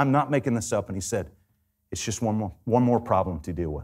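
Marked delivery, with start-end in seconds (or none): 1.9-3.8 low, flat, expressionless deadpan delivery. Retelling the reply he gave about the profit account: imitating someone's deadpan reply. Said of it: "He looked at me deadpan".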